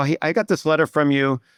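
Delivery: ordinary delivery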